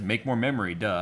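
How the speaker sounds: ordinary talk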